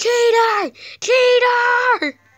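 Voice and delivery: very high, very loud, shrill accusing scream. Retelling a game opponent's reaction to a duel, mock yelling 'cheater'. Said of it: "She just starts yelling".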